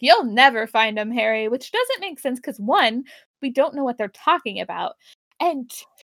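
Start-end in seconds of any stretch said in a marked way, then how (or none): 0.0-1.5 put-on angry voice, louder. Retelling a scene where Eve answers angrily: imitating Eve being mad. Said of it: "Eve's just, like, mad".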